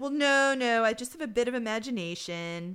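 ordinary delivery

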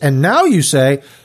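normal talking voice

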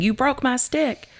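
mock, high, furious child's shriek of rage. Retelling a kid screaming after his stick got snapped, imitating a kid screaming in rage. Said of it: "and he's screaming".

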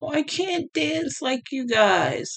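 fake crying. Mocking people who cry over the smallest things, mock crying.

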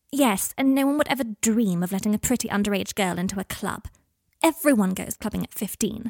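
ordinary delivery, nothing marked

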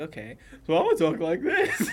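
high, swooping, childlike put-on commercial-read voice. Retelling a commercial voice-over read: imitating own high-pitched voice. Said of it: "I do the entire read like that".

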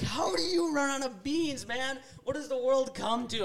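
full-on, loud, high-pitched yelling. Recalling yelling at the lady holding out the bag: retelling a yell. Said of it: "I yell at her".

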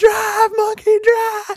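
full-on, movie-scene style, very high shrieked scream. Speaker acts out a scene from Grandma's Boy, retelling a movie scream. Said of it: "And then he screams".

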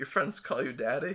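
mock stifled chuckling laugh. Retelling a scene, the speaker voices her question while acting out a chuckle. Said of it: "and she kind of chuckles, Loser her composure".

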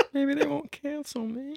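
very high, small, soft, meek, submissive voice. After being scolded over the pudding pops, speaker answers in a soft submissive voice. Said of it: "You sound soft and submissive".

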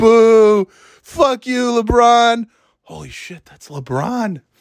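put-on very high, slow, drunken booing and heckling yell. Speaker imitating a drunk man talking to his girlfriend: imitating a drunk guy yelling. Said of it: "he's yelling everything".

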